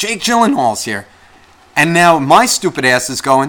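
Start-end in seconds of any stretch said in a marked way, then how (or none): 0.0-1.1 woman's high voice, yelling out loudly. Retelling how a drunk woman across the bar yelled: imitating a woman yelling out. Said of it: "I hear this woman yell out".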